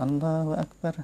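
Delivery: soft, listless, half-hearted, low-energy, no spirit. Showing how the takbir should not be said: listless, low energy. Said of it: "kayak koler begitu".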